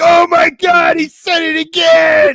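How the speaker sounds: very loud, very high, drawn-out, big, slow belting. Retelling what Triple H said in the background: imitating Triple H. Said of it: "Triple H in the background be like".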